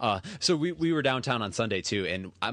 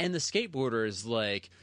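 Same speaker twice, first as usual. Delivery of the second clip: usual speaking voice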